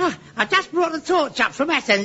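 very high-pitched, breathless, winded, panting speech. A character teased as a one-man Olympic team replies; out of breath. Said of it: "I'm sorry I'm out of breath".

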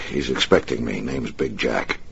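ordinary delivery

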